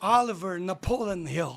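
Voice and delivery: West Virginia American accent. Pronouncing a full name the american way, in a west virginia accent. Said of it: "com o sotaque americano, lá, lá do oeste da Virgínia".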